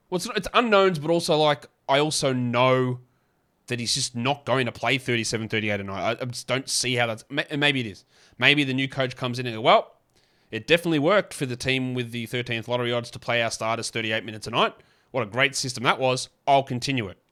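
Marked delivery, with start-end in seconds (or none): none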